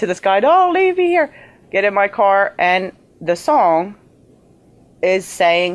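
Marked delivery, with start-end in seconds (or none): 0.4-1.3 screaming, crying, very high. Retelling screaming up at the sky on a country road, retelling a scream. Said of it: "screaming in the middle of the sky".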